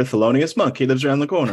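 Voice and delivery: ordinary talk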